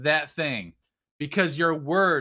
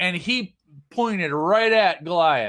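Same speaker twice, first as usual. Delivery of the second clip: normal talking voice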